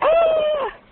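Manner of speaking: very high-pitched scream. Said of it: "Screams like кричат, like".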